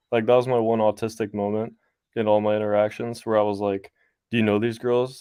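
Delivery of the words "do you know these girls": mock rude, confrontational, pushy tone. Retelling own question to a husband at a club: imitating own rude tone. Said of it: "in that kind of rude tone".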